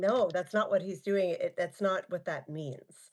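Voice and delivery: plain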